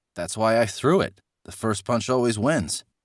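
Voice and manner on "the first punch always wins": ordinary delivery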